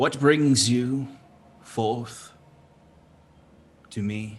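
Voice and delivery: commanding, lordly, authoritative voice. Calling up into the trees to a spider creature: authoritative voice. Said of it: "in his best authoritative voice".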